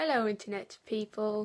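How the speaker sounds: put-on British-accented voice. Opening a video, greeting internet viewers in a British accent. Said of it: "Sorry for the British accent".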